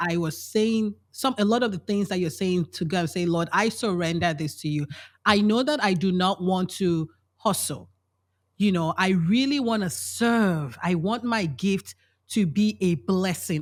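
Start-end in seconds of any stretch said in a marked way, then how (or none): none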